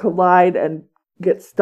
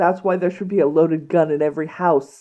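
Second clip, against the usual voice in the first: usual speaking voice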